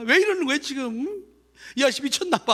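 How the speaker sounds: put-on crying child's high, tearful sobbing. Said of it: "막 울면서".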